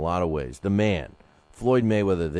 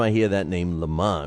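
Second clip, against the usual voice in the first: ordinary delivery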